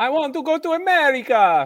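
booming, shrill, very loud, high and very slow. Imitating a film character's stereotypical accent: Fabrizio impression. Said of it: "a really good Fabrizio impression".

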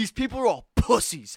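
put-on loud, high-pitched drunken ranting outburst. Recalling a Yankee game after a few drinks, the speaker retells a loud drunken rant. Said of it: "I was saying it so loud".

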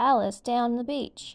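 ordinary delivery

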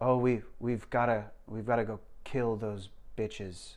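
mock flat monotone. Describing a monotone movie sidekick, the speaker imitates his line in flat monotone. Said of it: "So monotone".

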